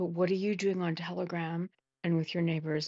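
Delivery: hushed, whispering voice. A speaker presses another speaker to clarify what they mean, whispering. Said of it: "I'm gonna say it in a whisper voice".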